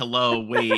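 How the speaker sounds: mock protesting, objecting tone. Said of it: "the minorities in the crew are being like".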